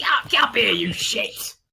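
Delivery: very high, gritty, creaky goblin voice. Narrating a game, the speaker voices a goblin's taunt: high-pitched goblin yell. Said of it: "yells in a very high-pitched goblin like".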